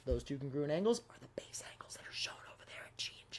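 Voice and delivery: soft, hushed whisper. Explaining a geometry problem out loud, catching oneself whispering. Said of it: "I don't know why I'm whispering".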